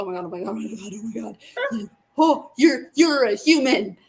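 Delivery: starstruck, gushing, freaking out, said loudly. Retelling meeting someone, acting out freaking out out loud. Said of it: "I was like externally".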